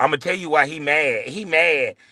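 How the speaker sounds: mocking, put-on little boy voice.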